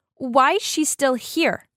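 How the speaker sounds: furious angry outburst, slow and deliberate. Reading a story aloud, a character yells at her father: angry yell. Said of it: "slammed her fist on the table and yelled".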